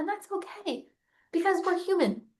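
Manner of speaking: soft emotional break. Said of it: "still makes me emotional".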